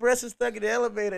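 imitated screaming. Retelling running down the stairs for help: retelling a scream.

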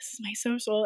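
acted-out whisper. Recounting stepping out of a gas station into the corner, retelling a whisper. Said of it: "like whispering".

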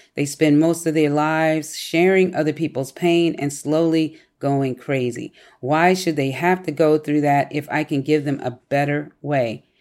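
plain

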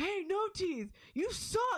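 mock very high, drawn-out drunken screaming heckle. Retelling what a drunk fan yelled at the glass: imitating a drunk fan screaming. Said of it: "screaming just nonsense".

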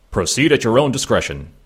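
put-on alien voice. Reading an episode recap aloud and quoting a line: Worf voice. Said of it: "your Worf is spot on".

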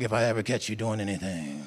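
low, menacing mob boss voice. Showing how you heard the words as the Godfather's, not a loving Father's, in a Godfather impersonation. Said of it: "like the Godfather's like".

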